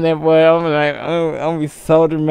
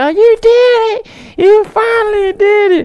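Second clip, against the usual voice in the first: very high, shrill, screaming crowd cheer; 5 dB louder than usual. Imagining thanking fans in a speech, imitating a screaming crowd. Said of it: "They gonna be screaming back".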